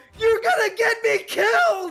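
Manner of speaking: very high-pitched, shrill shouting yell. A player's character, protecting someone as they fall, cries out: yelling. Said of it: "gonna yell".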